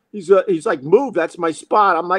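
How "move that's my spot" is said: mock muted shout, a mild half-yell. Retelling the guy jumping out of his car: imitating someone yelling. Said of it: "he's yelling and screaming".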